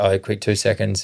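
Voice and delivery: ordinary talk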